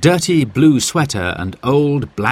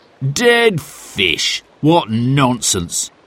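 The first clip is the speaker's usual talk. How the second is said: sneering, scornful, dismissive tone of disbelief. Narrator reading Sid's reply about dead fish, sneering. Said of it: "sneered Sid".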